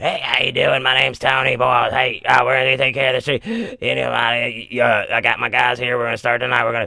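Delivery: voice through covered tracheotomy. Retelling how a man with a tracheotomy greeted them, imitating Tony's tracheotomy voice. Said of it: "he has to like put his hand over it to talk".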